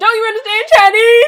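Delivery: shrill, very loud, high belted voice. Mocking a cartoon dragon's movie line: Eddie Murphy impression.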